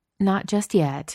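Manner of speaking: gentle, soothing, calming tone. Narrator reading a story, Peaches answers Chloe's grumpy remark: soothing. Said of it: "Peaches said soothingly".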